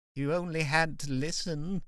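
slow, soft murmur under the breath. Narrating a scene, reading a cringing man's line, murmuring. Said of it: "murmurs Alfred".

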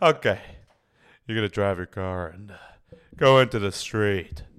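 loud commercial pitchman voice.

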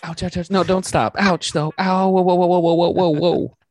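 mock orgasm noises. Answering a request to perform one's climax: mock climax noises. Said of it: "Do, do your climax".

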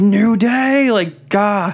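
mock very slow, stretched-out, mild yell. Recounting a tv moment, acting out a man yelling at new day; retelling a yell. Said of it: "the Miz just starts yelling like".

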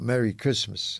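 plain

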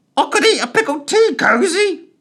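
strange, very high, loud parrot voice. Narrator reading Smith's added remark, in Smith's strange parrot voice. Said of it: "he added in his strange parrot voice".

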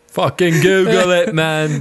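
slightly British put-on voice. Repeating an impression of Matt after a laugh: impression of Matt, a bit British. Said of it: "He got a bit British there".

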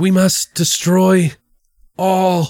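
play-acted, slow dying-man voice. Retelling a scene where a dying doctor speaks: imitating a dying man. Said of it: "In his dying state".

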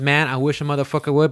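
plain

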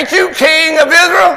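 play-acted scornful sarcasm, very high-pitched and loud. Acting out Jezebel rebuking the king, hand on hip: imitating Jezebel's sarcastic rebuke. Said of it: "putting her hand on the hip ... and saying".

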